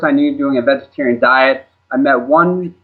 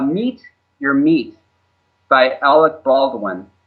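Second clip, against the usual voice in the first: said a little more slowly, repeated. Asked to repeat a documentary's title, saying it a little more slowly. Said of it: "can you say that again a little more slowly".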